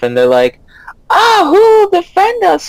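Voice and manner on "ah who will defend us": screaming voices, higher pitch. Voicing panicked nobles as guards are taken: nobles screaming. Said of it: "you hear the nobles screaming".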